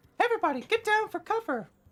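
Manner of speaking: high, squeaky, shouted cartoon voice. Voicing the commodore shouting for cover as weapons are drawn: Mickey Mouse voice. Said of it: "I decided to use Mickey Mouse for his voice".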